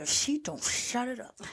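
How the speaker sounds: talking through gritted teeth. Telling how she reacted when Tessa ran for the door, retelling talking through teeth. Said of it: "I felt myself talking like mom through my teeth".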